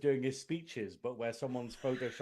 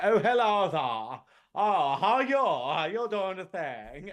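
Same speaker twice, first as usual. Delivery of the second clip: exaggerated silly high drawn-out voice, odd words stressed; 5 semitones higher, 7 dB louder than usual. Imitating a show character whose voice kept getting worse, silly voice stressing odd words. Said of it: "the character had a silly voice where they accentuated certain words".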